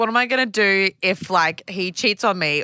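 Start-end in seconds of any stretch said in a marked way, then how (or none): none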